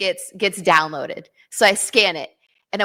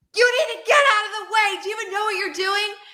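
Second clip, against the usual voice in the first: mock yelling, much higher and faster; 13 semitones higher than usual. Retelling what people yelled at the speaker before blacking out; retelling angry yelling. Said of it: "them yelling at me".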